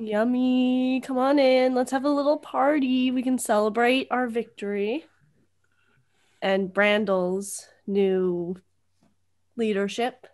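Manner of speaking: ordinary talk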